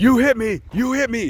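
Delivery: frantic, high-pitched, ballistic screaming. Retelling a driver chasing another car: imitating someone screaming. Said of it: "he's screaming".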